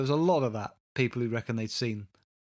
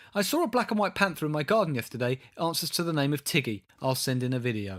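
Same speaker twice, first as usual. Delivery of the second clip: ordinary delivery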